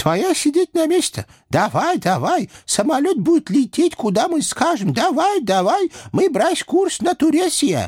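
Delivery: shrill, squeaky, very high-pitched voices. Narrating two house spirits bursting into the plane aisle with demands, squeaky voices. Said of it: "писклявыми голосами потребовали".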